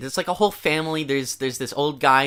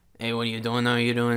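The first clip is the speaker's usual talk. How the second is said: flat monotone, no change at all, rattled off. Criticizing an actor's performance by mimicking his lines: imitating a monotone delivery. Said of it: "It was like one tone".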